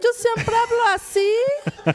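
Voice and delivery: put-on high, slow, drawn-out radio announcer voice.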